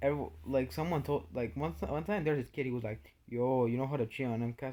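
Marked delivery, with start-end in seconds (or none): none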